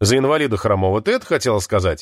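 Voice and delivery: ordinary talk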